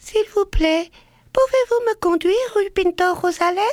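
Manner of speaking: tiny, very small voice like a bird. Showing how to ask a taxi driver for a ride: tiny bird-like voice. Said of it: "une toute petite voix, comme un oiseau".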